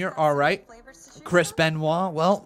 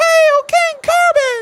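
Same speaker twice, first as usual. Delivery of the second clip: booming, very high-pitched, loud regal king voice; 11 dB louder than usual. Commentating at ringside, hailing king corbin in a put-on king voice. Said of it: "That's my king voice".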